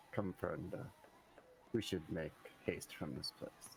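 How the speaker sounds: soft, hushed, close whisper. A character scoops someone up to lead him away; whispering in his ear. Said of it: "whisper in his ear".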